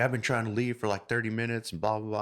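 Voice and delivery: irritated, pissed-off, fed-up griping. Retelling a man upset that she took a parking spot: imitating a pissed-off man. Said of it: "he's pissed off".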